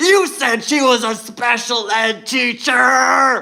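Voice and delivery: mock top-of-the-lungs yell, very slow and drawn out. Retelling how a man reacted to a remark: retelling a man screaming. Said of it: "He started screaming at the top of his lungs".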